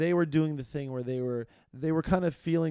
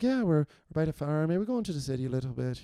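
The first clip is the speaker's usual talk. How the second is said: put-on subdued Galway Irish accent. Describing relatives from Galway, imitating a subdued Galway accent. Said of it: "sound like that".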